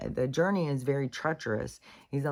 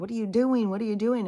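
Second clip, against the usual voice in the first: mock yelling, much higher and faster; 4 semitones higher than usual. Retelling a story, the speaker acts out the medicine man, retelling a yell. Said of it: "the man keeps yelling back".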